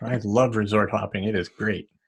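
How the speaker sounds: slow, sarcastic tone meaning the opposite. Answering others who love resort hopping: sarcastic tone. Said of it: "That's [name]'s sarcastic tone".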